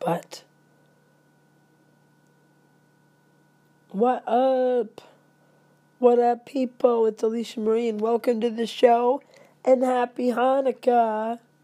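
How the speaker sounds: hoarse, sick-sounding voice. Greeting listeners at the start of the show, sick voice with laryngitis. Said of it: "Pay no attention to my voice".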